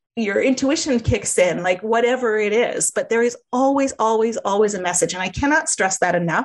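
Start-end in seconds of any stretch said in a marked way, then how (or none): none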